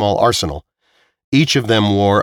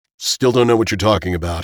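ordinary delivery

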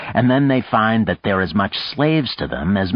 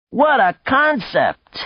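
very high-pitched cry through laughter. Reading a novel, a man at a table laughs at his companion's idea; crying out, laughing. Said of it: "he cried and started to laugh again".

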